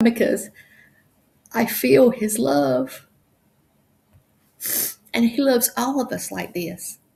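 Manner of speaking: speaking through tears. Speaker thanking Archangel Michael, feeling his love: crying while talking. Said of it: "that's why I'm crying".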